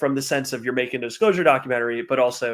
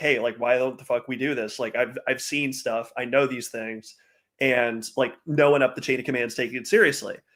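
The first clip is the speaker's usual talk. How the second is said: ordinary talk, nothing marked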